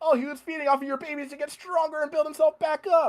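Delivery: put-on scream, pitched way up.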